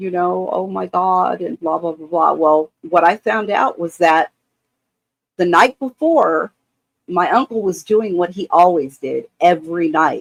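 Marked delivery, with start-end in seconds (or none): 0.5-1.4 put-on, tearful, weeping cry. Retelling overhearing the mother on the phone: imitating someone crying. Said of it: "she was crying".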